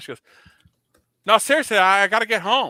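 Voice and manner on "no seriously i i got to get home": put-on loud, high-pitched woman's Newfoundland accent. Retelling what a woman said while he was on the phone, newfoundland accent. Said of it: "she's got a, a Newfoundland accent".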